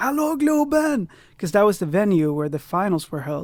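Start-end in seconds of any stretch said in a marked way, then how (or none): 0.0-1.1 acted-out scream at very high pitch. Retelling what they screamed on stage at ten: imitating own childhood scream. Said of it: "I was screaming, like".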